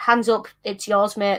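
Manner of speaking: normal talking voice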